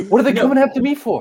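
plain actor's movie-star voice, pitched way up. Riffing on a film role, doing a Mark Wahlberg impression. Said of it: "You're just doing Mark Wahlberg".

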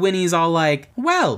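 plain

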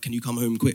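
panicked, frantic voice. Retelling a phone call from mum asking him home: imitating mum panicking. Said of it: "My mum's, like, panicking".

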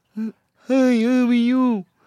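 squeaky, very high-pitched voice. Showing a listener the voice the speaker does: put-on deaf voice. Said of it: "So this is my deaf voice".

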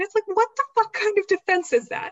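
heated outburst, very high pitched and loud. Speaker reacts to an argument they find absurd, getting heated. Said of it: "I'm getting real heated about this".

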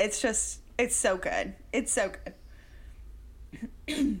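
emotional, voice catching. Reviewer talking about movies from her childhood that she loves, getting choked up. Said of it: "I'm not getting choked up".

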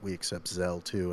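put-on dead-serious tone. Retelling what a man said to them, in a mock-serious voice. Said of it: "he said in the most serious voice".

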